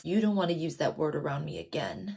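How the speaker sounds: gravelly, very low, hushed voice. Recapping an interrogation scene, a detective warns a suspect, gravelly Stabler voice. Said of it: "says in a gravelly voice".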